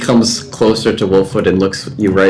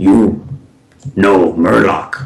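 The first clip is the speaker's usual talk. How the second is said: deep, grumbling, growling gorilla-creature voice. Game master voicing a gorilla creature speaking into a player's head, in a deep growling gorilla voice. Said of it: "you hear a deep growling, grumbling voice".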